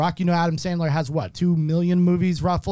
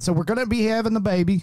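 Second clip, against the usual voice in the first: fake, put-on down-home country accent; 3 semitones higher than usual. Keeping up a joke voice while talking about the baby: put-on country accent. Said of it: "I wanna see how long you could talk like this".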